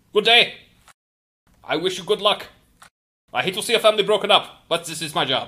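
put-on high Austrian-accented voice. As the tall opposing attorney in a custody case, greeting the other side, in an Austrian accent. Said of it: "then Austrian accent".

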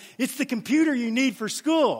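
put-on, thrilled, eager, all-excited tone. Retelling a man's words as he gives his sister a Christmas computer: acting out an excited reply. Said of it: "And he's all excited".

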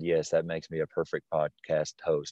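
soft, dry, sarcastic aside. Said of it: "I understand I'm being sarcastic".

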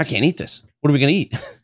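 frantic, panicked, high-pitched, rushed freak-out. Retelling how a man reacted on finding no meat, mock freaking out. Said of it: "He's freaking out".

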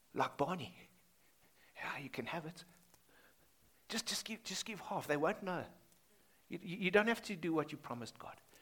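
sweet, soft, hushed, coaxing, tempting half-whisper. A speaker voices the devil tempting two hypocrites, in a soft tempting half-whisper. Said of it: "the devil whispers softly".

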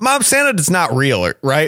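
very loud, swooping, suddenly blurted out. Retelling asking mom in a grocery store, retelling a loud question. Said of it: "I suddenly like very loudly asked".

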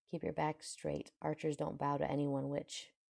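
ordinary delivery

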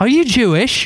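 put-on light British accent. Retelling what John Goldingay said back: imitating John Goldingay's British accent. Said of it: "he's got this great British accent too".

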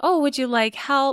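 mock friendly, high, very nice voice. Retelling a store worker offering a customer help: imitating a very nice worker. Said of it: "She's being very nice to him".

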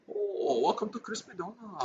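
half-whispered, breathy put-on Chinese accent. Asked to do Chinese, performing a Chinese accent. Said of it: "do Chinese".

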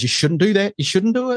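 annoyed scolding tone, high pitch.

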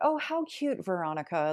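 high, heavily sarcastic, mocking coo. Recounting how people on another show talked to her, imitating sarcastic tone. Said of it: "very like sarcastically talking to me".

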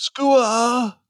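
acted screaming voice. Retelling calling out birds on trips: imitating a spotter screaming.

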